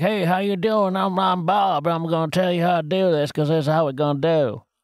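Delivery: put-on Southern accent. Describing a robot character in a film, imitating Bob's Southern accent. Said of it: "the only character in the film who is Southern".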